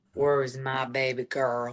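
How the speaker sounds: low put-on Appalachian accent. Asked to let the others hear it, the speaker shows her Appalachian accent. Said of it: "My Appalachian accent".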